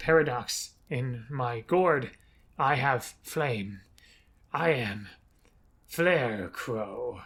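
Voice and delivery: very slow, odd, drawn-out mumbling to oneself. Retelling how the party found a scarecrow on a stump: strange muttering voice. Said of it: "muttering it to itself".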